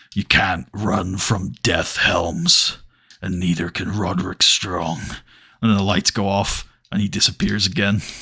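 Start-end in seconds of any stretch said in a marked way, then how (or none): 0.2-5.0 very low, soft, hushed growl. Pitching a promo where The Undertaker confronts Helms backstage: low growl. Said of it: "he just says in a low growl".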